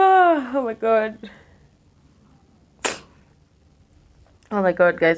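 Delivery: tearful voice breaking into crying through words. Speaker breaks down while telling the audience about feeling dizzy: crying. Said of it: "I didn't want to cry".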